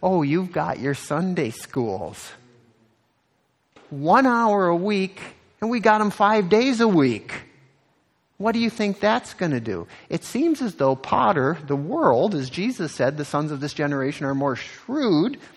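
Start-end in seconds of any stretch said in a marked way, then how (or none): 0.0-9.9 high, scornful, taunting, mocking tone. Speaker retelling what a man mockingly said to the church, retelling a mocking jab. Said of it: "as he kind of mockingly said".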